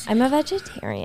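put-on Valley Girl accent, soft. Speaker repeats a remark to show off a valley girl accent. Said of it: "that was my Valley Girl accent".

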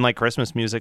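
normal talking voice

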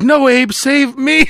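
mock very slow, high, dragged-out yell. Imagining what the other person would yell while hanging: imitating someone yelling. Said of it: "Mike would be like".

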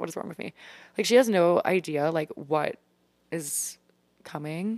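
choking up with tears, teary, halting voice. Looking back on a younger self while talking to listeners: tearing up. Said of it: "I'm literally tearing up right now".

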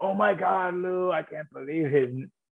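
put-on high, slow, drawn-out French accent. Retelling the reply to a guest-appearance offer, imitating the french kid. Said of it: "that French kid and was like".

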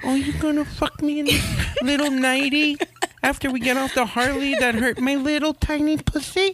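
put-on very high-pitched, cooing baby voice. Speaker showing how to go a little bit baby, in a baby voice. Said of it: "I like the baby voice".

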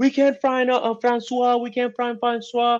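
acted, very high, sobbing, bawling wail. Retelling a girlfriend's 2 a.m. phone call; imitating someone bawling. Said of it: "like bawling out crying".

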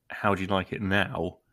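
plain

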